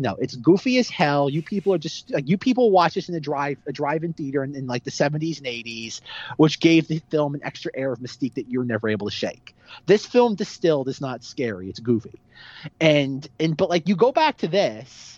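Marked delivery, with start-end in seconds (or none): none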